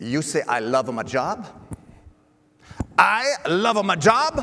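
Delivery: put-on Swiss-Italian accent. Retelling an old baker's reply: imitating a Swiss-Italian accent. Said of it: "That's exactly what this gentleman sounded like".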